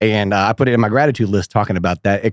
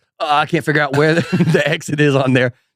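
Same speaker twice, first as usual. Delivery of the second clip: put-on panicked, flustered, stumbling, totally freaking out; 5 semitones higher than usual. Retelling own panic before going on stage: imitating own panic. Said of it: "Totally freaking out".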